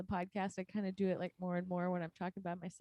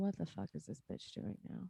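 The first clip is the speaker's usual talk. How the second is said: mock-judgmental dog voice, quieter; 7 dB quieter than usual. Describing the dog's moods, the speaker voices the dog in a mock-judgmental way. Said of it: "I feel like he's judging me and he's just like".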